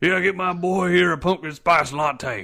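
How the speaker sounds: put-on country accent. A speaker imagines a big muscular dude ordering at Starbucks for his pit bull, in a country accent. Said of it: "Why is he country?".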